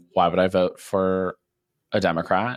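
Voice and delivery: ordinary talk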